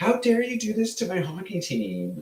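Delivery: very high voice, pitch swinging wildly. Show the other speaker whose accent you were putting on, doing a Karen. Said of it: "doing a Karen".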